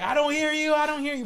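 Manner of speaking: shrill, very high yelling, far off. Retelling his dad yelling from across the house, imitating dad screaming. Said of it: "He'll be screaming".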